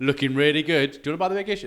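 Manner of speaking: very loud, high street-vendor sales patter. Retelling how a Big Issue seller flattered passers-by: imitating a Big Issue seller. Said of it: "He's like".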